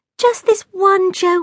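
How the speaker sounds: begging, pleading, pitched very high. Jack has stuffed his fingers in his ears; the narrator is begging. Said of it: "I begged".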